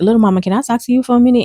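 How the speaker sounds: pointed voice with attitude. Retelling how a roommate asked to talk: imitating someone saying it with attitude. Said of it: "she said it with an attitude".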